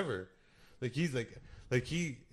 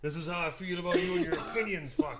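put-on angry old man voice, higher pitch; 6 semitones higher, 4 dB louder than usual. Retelling how an old man delivered letters: imitating an angry old guy. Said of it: "real pissed off at my dad".

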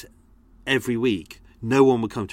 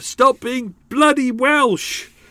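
acted-out shout, much higher and louder; 14 semitones higher, 5 dB louder than usual. Telling how he kept scolding himself for slipping into an accent: retelling shouting at himself. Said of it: "And I kept shouting at myself".

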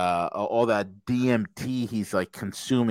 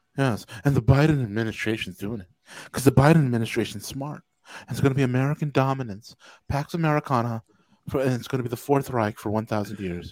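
put-on soft-spoken voice. Mimicking a man with inflections you find weird, do a soft-spoken Peter Zeihan impersonation. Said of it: "So soft-spoken".

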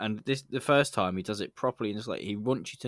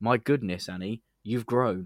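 plain

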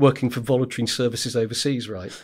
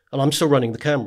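ordinary talk, nothing marked

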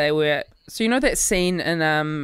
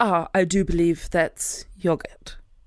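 put-on fully committed poor British accent. Retelling a film scene, trying a bad Hugh Grant impression. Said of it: "you went Hundy on the accent".

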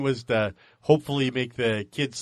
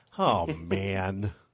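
put-on soft, deflated, disappointed voice; 5 semitones lower, 5 dB quieter than usual. A parent retells a daughter's reaction to watching baseball, imitating daughter's disappointed voice. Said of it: "in the most disappointed voice ever".

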